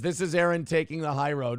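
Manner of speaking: ordinary talk, nothing marked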